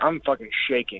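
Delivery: ordinary delivery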